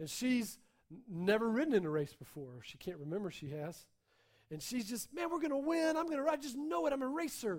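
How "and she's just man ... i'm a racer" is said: acted-out thrilled, eager talk, pitched up. Narrating a girl about to ride in a race with her new car: excited. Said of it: "she's excited".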